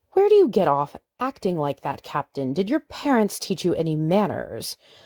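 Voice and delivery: irritated, indignant, annoyed, scolding tone. Narrator reads the head nurse questioning the captain, annoyed. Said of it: "The head nurse was a woman who scared him, a bit of an air of mother superior to her, / the head nurse asked, / The head nurse was a woman who scared him".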